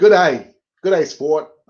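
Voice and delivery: put-on Australian accent. Speaker greets people after his voice has gone aussie; put-on australian accent. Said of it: "it's gone all Aussie on me now".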